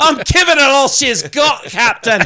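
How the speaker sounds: very high, very loud fake Scottish brogue. Quoting a line after being praised for a scottish accent: put-on scottish accent. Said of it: "fantastic accent of a Canadian man doing a Scottish accent".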